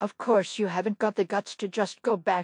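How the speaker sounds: ordinary delivery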